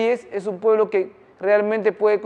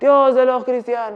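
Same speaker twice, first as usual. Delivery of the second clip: light, toned-down put-on shout, cried out; 3 semitones higher than usual. Retelling a king's prayer for victory in war: imitating someone shouting. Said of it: "Y empezó a gritar".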